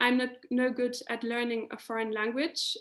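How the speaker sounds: ordinary delivery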